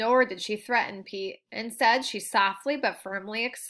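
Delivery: ordinary delivery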